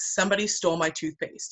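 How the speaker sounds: normal talking voice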